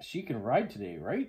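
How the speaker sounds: usual speaking voice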